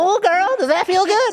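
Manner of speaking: very high, squeaky cartoon seductive bedroom voice. Joking about the date's voice in bed: SpongeBob bedroom voice. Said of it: "that's the worst bedroom voice".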